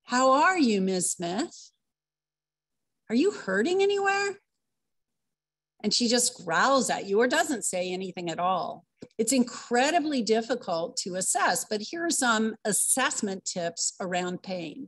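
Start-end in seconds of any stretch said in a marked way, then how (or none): 0.1-4.4 gentle, kindly, calm, soothing voice. Speaker shows how to question someone who won't say what's wrong, calm, soothing voice. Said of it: "in your good, calm, soothing voice".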